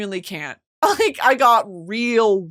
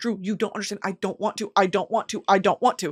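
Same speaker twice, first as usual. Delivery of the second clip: mock pleading, acted-out begging tone; 6 dB quieter than usual. Retelling how she pleaded with drew not to go over; retelling her pleading. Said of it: "I'm pleading with her".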